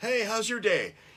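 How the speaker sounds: very high-pitched, shrill, loud called-out holler. Retelling calling up the stairs to the other speaker in the bathtub, retelling hollering. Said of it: "I'm like hollering up the stairs at you".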